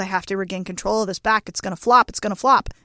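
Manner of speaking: ordinary delivery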